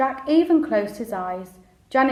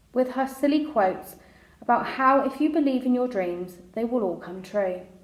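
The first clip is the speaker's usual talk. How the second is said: ordinary delivery, nothing marked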